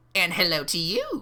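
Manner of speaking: chirping, chirpy voice of a tiny imp creature. A tiny creature answers the player's greeting, in a chirping creature voice. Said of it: "the creature replies, chirping".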